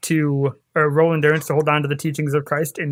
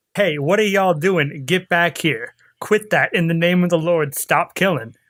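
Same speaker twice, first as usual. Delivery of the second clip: normal talking voice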